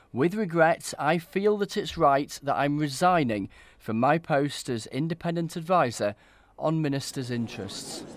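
normal talking voice

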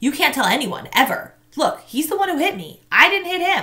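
firm, insistent tone. Marshall replies to Tamaya as the other boys head back; firmly. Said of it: "Marshall said firmly".

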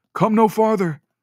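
put-on voice cracking like a boy's. Young lord warning an approaching figure in the snowy trees: voice cracking like a boy's. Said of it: "His voice cracked like a boy's".

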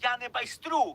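sudden cry, very loud and high-pitched. Kost suddenly lifts his head and answers Mykyta's mocking remark: shouting. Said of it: "підняв голову і крикнув".

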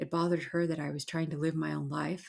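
ordinary delivery

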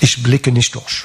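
ordinary talk, nothing marked

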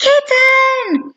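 very high, loud, thrilled squeal. Spotting a kitten in the branches of a tall tree: an excited squeal. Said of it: "Madeline excitedly squealed".

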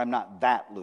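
THAT stressed and pressed down with a falling tune. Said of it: "careful about the way you emphasize that".

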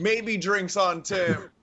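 shrill, very high shouted yell. In a role-play scene, a character yells out to the rest of the house. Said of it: "I yell out".

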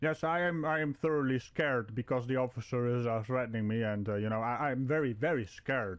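ordinary talk, nothing marked

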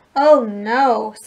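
sighing, sighed out. Arthur finds DW waiting for him at the treehouse, sighing. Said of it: "sighed Arthur".

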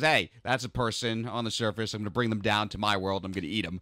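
plain

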